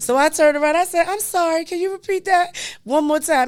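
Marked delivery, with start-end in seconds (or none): 1.1-3.5 mock bright, sunshiny voice. Retelling asking for the raffle number again: retelling own best sunshine voice. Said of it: "in my best sunshine voice".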